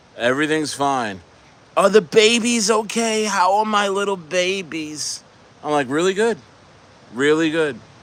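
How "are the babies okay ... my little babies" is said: voice pitched up and drawn out.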